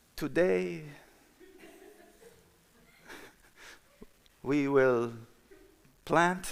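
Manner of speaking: very slow, relaxed, drawn-out, deliberate, slightly high speech. Retelling how a coworker named Alberto talked, imitating Alberto's slow speech. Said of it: "he would speak really slow".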